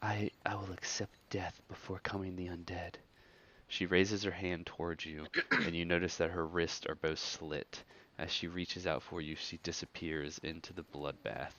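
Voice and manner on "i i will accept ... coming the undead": soft, hushed, barely voiced whisper of a woman. A woman in a bloody bath whispers a plea to you, whispering. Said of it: "You hear the Fate woman whisper".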